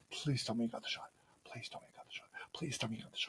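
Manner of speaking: hushed, whispered muttering under the breath. Act out yourself on the whale watching trip, hoping the photographer got the shot, retelling a mutter. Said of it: "you hear me muttering".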